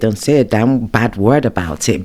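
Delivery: ordinary talk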